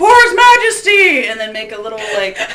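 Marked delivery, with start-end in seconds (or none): 0.0-1.3 very high, loud, shrill, booming guard shout. Suggesting how to fake a fight with several guard voices, doing another guard's voice. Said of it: "have another guy go".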